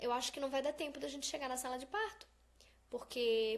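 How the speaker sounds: ordinary talk, nothing marked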